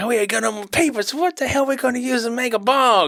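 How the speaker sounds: play-acted, very high, irritated and pissed-off griping. Retelling a movie scene where Shorty runs out of papers: imitating Shorty pissed off. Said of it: "Shorty's kind of pissed off".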